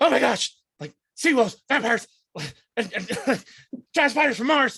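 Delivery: very high, rapid, jittery, panicky babbling. Voicing a frightened character checked on by a player: nervous panicky babbling. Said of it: "just a, a mess of nerves right now".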